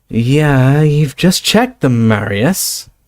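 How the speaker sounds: slow, faintly dazed, muddled reply tone. Narrator voices the guard's companion replying to him, slightly dazed. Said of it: "said in a slightly dazed voice".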